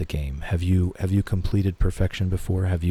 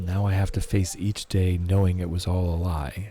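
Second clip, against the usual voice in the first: ordinary talk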